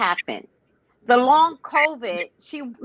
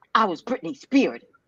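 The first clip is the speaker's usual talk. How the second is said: ordinary talk, nothing marked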